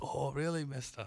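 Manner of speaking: mock childlike Chinese-sounding accent. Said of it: "the Kuwaiti boys apparently sound like Chinese men to you".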